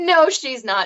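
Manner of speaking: high, dismissive brush-off said through laughter. Retelling a childhood story, the speaker quotes mom's denial: imitating mom laughing mockingly. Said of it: "She's laughing at me".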